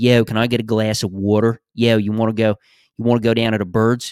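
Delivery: put-on Philadelphia accent. Praising an actress's accent work, the speaker mimics her lines in a Philly accent. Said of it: "she does a premium Philly accent".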